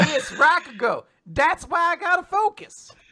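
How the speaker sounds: put-on Southern US comic accent. Reading a character who shouts in a distinct regional accent: Larry the Cable Guy accent. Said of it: "That was just me trying to channel, like, Larry the Cable Guy".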